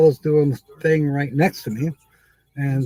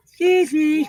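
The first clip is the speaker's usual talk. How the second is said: little, tiny, very high soprano voice; 13 semitones higher than usual. Recounting how she excused herself after a belch, use a tiny high voice. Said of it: "in this little tiny high voice".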